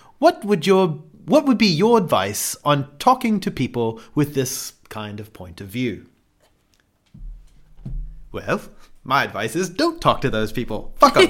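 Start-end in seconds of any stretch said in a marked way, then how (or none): 0.2-6.1 put-on British accent. Reading a written question aloud on the fly: British accent. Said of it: "it's hard to read 'em in a British accent on the fly".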